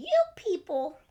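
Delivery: put-on old voice with Southern accent. Naming the movie under review in an old Southern voice. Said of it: "What voice was that that you just did?".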